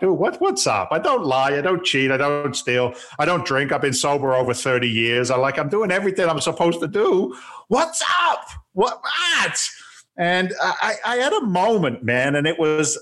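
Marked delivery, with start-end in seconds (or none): 0.0-9.7 screaming, shouting voice. Retelling how he yelled at God during hard times: retelling own screaming at God. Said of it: "I'm screaming and shouting and hollering at my guy".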